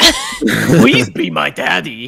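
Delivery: put-on monster impression voice. Showing how the fetus that chases the player talks: fetus monster impression. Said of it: "The fetus is more like".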